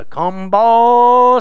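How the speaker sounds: mock cow-calling holler. Calling to cows in a pasture, imitating a farmer calling cows. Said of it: "my best imitation of my farmer friend".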